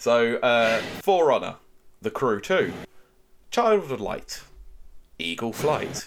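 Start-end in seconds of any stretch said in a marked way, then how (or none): 1.0-6.1 broadcast-style show announcer voice. Reading out a list of game titles to a co-host, announcer voice. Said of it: "I've got my announcer's voice on now".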